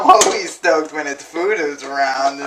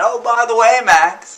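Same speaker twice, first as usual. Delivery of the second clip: bad put-on voice, pitched up, slow, loud, drawn out; 9 semitones higher, 5 dB louder than usual. Retelling what Frank suddenly told them: bad imitation of Frank. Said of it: "I'm really doing a bad imitation".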